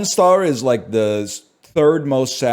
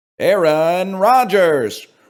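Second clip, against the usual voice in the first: high, boxing ring announcer voice; 7 semitones higher than usual. Speaker saying a quarterback's name as a game announcer would: Super Punch-Out announcer voice. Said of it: "in the Super Punch Out announcer voice".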